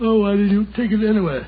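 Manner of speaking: sleepy, drowsy voice, sounding like nodding off. In a drama, a character asks his companion a question, sleepy. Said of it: "You sound sleepy, old chap".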